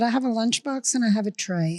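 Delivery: plain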